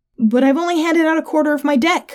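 high, protesting, objecting tone. The narrator replies to Kelly and Gina, protesting. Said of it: "I protested".

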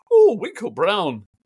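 appalling put-on Scottish accent, high and loud. Retelling what the chief registrar of Scotland said: appalling Scottish accent. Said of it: "my appalling accent".

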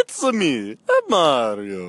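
high, loud, swooping voice with each word drawn out. Doing an impression when asked for one: Mario voice. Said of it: "do your best impression".

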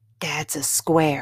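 in a whisper. Valerie answers the narrator, whispering. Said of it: "Valerie whispered".

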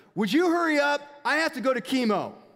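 yelling loudly at high pitch. Recalling a customer at checkout, imitating her yelling at the cashier. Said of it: "and she just yells again at me".

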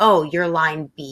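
put-on gloating voice. Retelling how an officer reacted on seeing his passport; mock-gloating officer. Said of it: "it was the way he said it".

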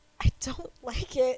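put-on sad voice. Retelling her reply to a guy she didn't know yet, mock-sad voice. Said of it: "I look up at him like all sad".

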